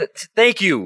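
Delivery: high, slow, over-the-top, overdone grateful tone. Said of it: "Just, just over the top".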